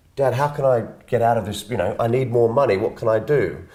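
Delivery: plain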